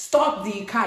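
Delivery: loud, high shout. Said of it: "He started shouting".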